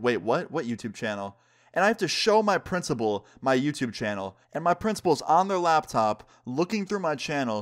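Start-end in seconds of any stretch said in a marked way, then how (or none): none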